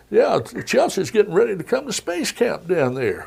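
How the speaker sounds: very high, rough-edged, chatty voice. Retelling what was said after a news conference: Bill Clinton impression. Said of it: "I'm trying to do my best Bill Clinton".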